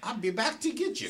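London Cockney voice. Retelling a fired employee's vow of revenge, in Sands's Cockney accent. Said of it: "in that Cockney accent".

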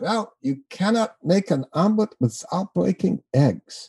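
put-on German accent. Retelling a judge's reply at a dinner: imitating a German accent. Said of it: "with a German accent".

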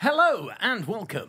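announcer-style voiceover voice. Showing how voiceovers are done: voiceover voice. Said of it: "I just go into a different voice".

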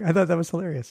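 words broken up by laughing. Reacting to own joke about a charity's name: laughing while talking. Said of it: "sorry, I'm laughing at my own joke".

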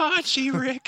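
very high, loud, blurted cartoon voice. Teasing the other speaker for sounding like him, doing a Morty impression. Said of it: "You just sound like a northern Morty".

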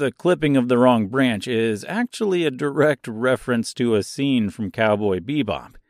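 ordinary talk

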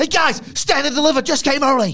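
shrill, very high, booming, belted full-volume hype. Mocking a wrestling show preview: Vic Joseph voice. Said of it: "That's not a Vic Joseph got, uh, voice".

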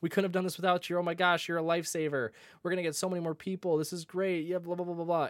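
high, gushing voice.

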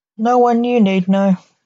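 plain

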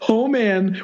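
high, giddy, thrilled squeal of delight.

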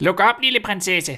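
high, loud calling shout. Narrator reads a voice at the door calling to the little princess, shouting. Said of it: "en stemme råbte".

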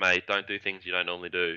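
ordinary delivery

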